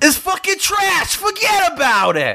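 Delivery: put-on very high, swooping New Jersey accent. Asked to give feelings about New Jersey, answering in a New Jersey accent. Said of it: "tell us your feelings about New Jersey in a New Jersey accent".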